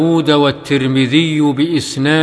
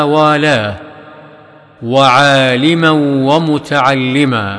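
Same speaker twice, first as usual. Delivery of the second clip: ordinary talk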